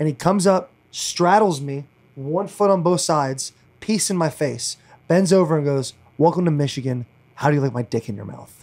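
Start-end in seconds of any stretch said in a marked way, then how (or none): 6.2-8.5 gravelly, glass-chewing, ground-out voice. Retelling a strength coach greeting a player after a workout: imitating Mike Barwis's gravelly voice. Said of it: "he sounds like he's chews on glass".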